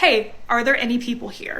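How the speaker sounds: normal talking voice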